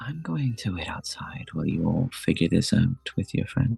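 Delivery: soft, hushed whisper under the breath. Voicing a character who steps aside to speak privately: whispering. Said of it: "Ophelia whispers to you two".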